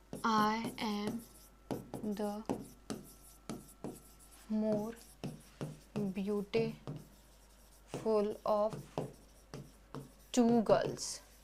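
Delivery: slow, quiet delivery. A teacher saying an example sentence to students, slow and soft. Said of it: "धीरे क्यों बोल रही हूँ?".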